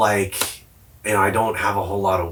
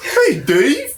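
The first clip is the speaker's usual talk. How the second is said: very high, loud, cartoonish goofy voice; 5 dB louder than usual. Imitating the adults from a weird neighborhood greeting a kid: imitating goofy-talking adults. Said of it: "They all talk, like, goofy".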